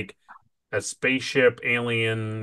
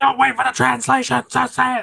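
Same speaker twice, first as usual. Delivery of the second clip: very high, raw, furious angry scream; 13 semitones higher, 5 dB louder than usual. Speaker retells a scene where one character screams at another, retelling a scream. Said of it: "he like screams at Kirk".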